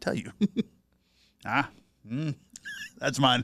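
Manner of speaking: shaky, hushed movie-star impression voice. Asked to do an impression on the spot, answer with a Denzel Washington impression. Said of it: "do an impression of Denzel Washington".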